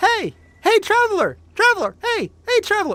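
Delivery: very high, very loud, shrill nagging fairy voice. Choosing a game companion, the speaker imitates the option they reject: Navi impression. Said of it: "just doing that impersonation right there".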